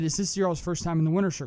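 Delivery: ordinary talk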